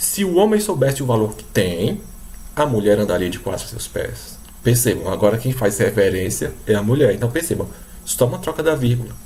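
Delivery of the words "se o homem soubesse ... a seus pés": clear pause right after the word "tem". Reading the sentence with the comma moved after 'tem': pause after 'tem'. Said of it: "Ele vai colocar ela aqui, depois do tem. Agora, observe como é que fica a leitura".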